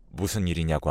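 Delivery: normal talking voice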